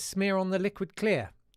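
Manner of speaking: ordinary talk, nothing marked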